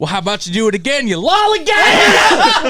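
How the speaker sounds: furious, high-pitched, angry screaming. Recalling a friend's dad scolding them at practice: imitating his angry screaming. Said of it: "he screamed lollygaggers at us".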